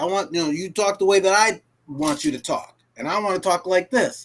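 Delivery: plain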